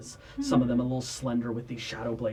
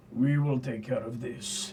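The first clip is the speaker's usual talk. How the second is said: resolute, steady, commanding, warrior-like tone. Bartolomeo looks to you all and speaks, in a booming voice that echoes. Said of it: "in a booming voice that echoes".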